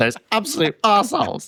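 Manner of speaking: high, put-on outraged rant.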